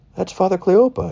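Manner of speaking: high-pitched, excited woman's voice.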